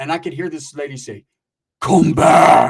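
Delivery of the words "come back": very loud, rasping, crazed demon voice. Retelling a lady calling out while he was stuck in the mud, crazy demon voice. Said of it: "Like a crazy demon voice".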